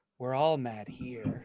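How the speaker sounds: eerie, creepy gnome character voice. Voicing a creepy gnome who grins at the players: creepy gnome voice. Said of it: "one creepy gnome who looks at you and big toothy grin".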